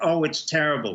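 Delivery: normal talking voice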